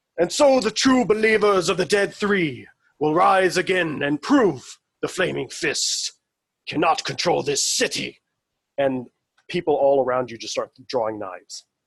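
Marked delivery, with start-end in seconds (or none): 0.2-8.2 ringing, carrying, raised-pitch proclamation-style voice. Game narrator voicing a man proclaiming to people all around: voice ringing out. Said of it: "his voice rings out".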